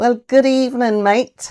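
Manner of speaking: very bad, put-on Australian accent. Greeting a guest joining live from Sydney: bad Australian accent. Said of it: "my very bad impression of an Australian accent".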